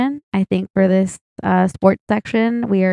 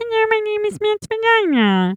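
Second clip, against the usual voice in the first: put-on imagined body-part voice, higher pitch; 13 semitones higher than usual. Showing friends what an imagined voice would sound like: voice of Matt's vagina. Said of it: "that's what I imagine if Matt's vagina was to have a voice".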